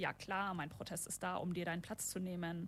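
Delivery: ordinary talk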